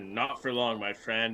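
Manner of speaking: muttered, mumbled delivery. A player's character speaks to a beaten fighter while going to collect winnings: muttering. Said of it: "I mutter".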